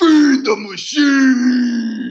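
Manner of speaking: shrill, very loud, high, stretched-out promo roar. Performing a podcast intro line on request: Hulk Hogan / Macho Man Randy Savage voice. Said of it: "a Hulk Hogan, Macho Man, Randy Savage, uh, voice".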